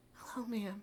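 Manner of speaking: mocking flowery respectful tone. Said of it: "here he is on the phone".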